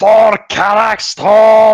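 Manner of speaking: shrill, very high, very loud screaming cry. Charging into the fight in the game: screaming battle cry. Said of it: "I'm screaming".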